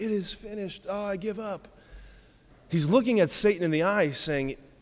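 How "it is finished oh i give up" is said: soft, mild, timid and desperate tone. Showing how the line should not be heard: meek, mild and desperate. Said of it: "don't hear Jesus saying very meekly and mildly and desperately".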